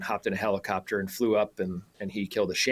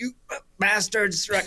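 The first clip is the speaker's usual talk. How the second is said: put-on high yell in a New Zealand accent; 12 semitones higher than usual. Quoting a man on the road yelling at his sheep, new zealand accent. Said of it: "in his New Zealand accent".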